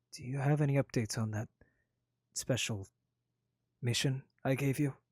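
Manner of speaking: stage whisper. Leaning forward to ask the travelers about the mission he gave them, lowered voice. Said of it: "He leans forward and lowers his voice".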